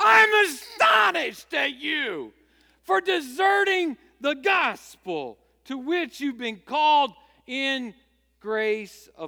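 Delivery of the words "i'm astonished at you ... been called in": forceful, agitated, very loud proclamation-style delivery. Reading the apostle's letter as he might sound, imitating an agitated apostle. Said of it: "not in a calm, passive voice ... I think the apostle might sound more like this".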